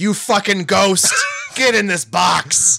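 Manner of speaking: mild, restrained, high-pitched theatrical yell. Acting out a man yelling at a ghost, imitating a yell. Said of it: "he's just yelling".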